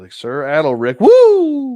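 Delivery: very loud, high, drawn-out "woo", shrill and booming. Imagining his future review of the figure, doing a Ric Flair woo. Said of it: "woo wooing like Ric Flair".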